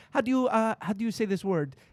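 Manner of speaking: phony, put-on Spanish accent. Retelling a TV clip of Hilaria Baldwin asking a word: Hilaria Baldwin imitation. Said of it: "pretending that she's Spanish".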